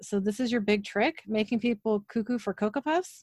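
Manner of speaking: plain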